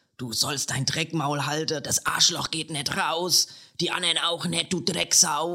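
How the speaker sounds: woman's voice ranting wildly in Hessian dialect. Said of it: "Sie redet dabei den Dialekt aus meiner Heimatstadt".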